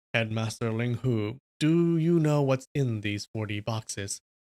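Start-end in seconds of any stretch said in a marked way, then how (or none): none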